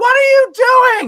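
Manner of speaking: very high, very loud, shrill, frantic, panicked shriek. Storyteller voicing a doctor somewhere in the back, screaming. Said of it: "and they're screaming".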